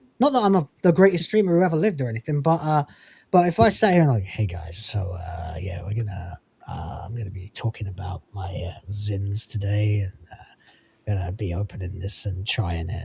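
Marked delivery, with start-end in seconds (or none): 4.2-13.1 very low, listless, bored, flat monotone drone. Showing how not to open a live stream, imitating a bored streamer. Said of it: "my impression of how not to do a live stream".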